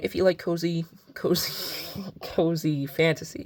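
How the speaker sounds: words spoken through laughter. On a bookshelf tour, recommending a book series: laughing while talking. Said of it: "I'm sorry I'm laughing".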